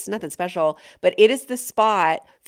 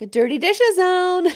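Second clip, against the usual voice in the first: nanny voice, very high, half-shouted, low-key yelling; 11 semitones higher, 4 dB louder than usual. A parent calling the kids to the dirty dishes zone, Mary Poppins voice. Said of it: "low-key yelling in my Mary Poppins voice".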